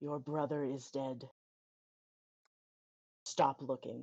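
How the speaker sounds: eerie, chilling, hushed half-whisper. Voicing a hooded cloaked figure speaking to a character: chilling half-whisper. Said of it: "It says in a chilling whisper".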